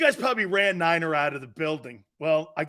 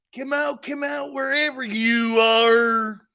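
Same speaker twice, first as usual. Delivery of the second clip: put-on high, slow country drawl, "are" stretched long; 5 semitones higher, 4 dB louder than usual. Showing off a put-on redneck voice picked up in Florida: put-on redneck voice. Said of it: "I'm starting to talk like this".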